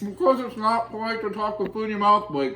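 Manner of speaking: garbled mouth-full speech. Echoing the other speaker's words back while eating, talking with mouth full. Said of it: "I can't understand what you're saying".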